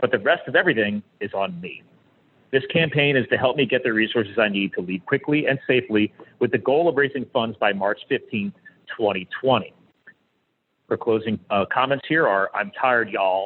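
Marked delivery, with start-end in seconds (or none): 12.5-13.5 put-on Southern drawl. Reading a listener's email aloud: Southern accent. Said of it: "that's my best Southern thing".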